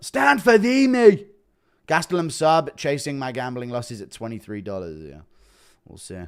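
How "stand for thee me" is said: put-on very loud, very high, slow bellow in Irish accent. Act out Conor training Mallet and telling him to stand, in a Conor McGregor impression. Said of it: "Impression of Connor".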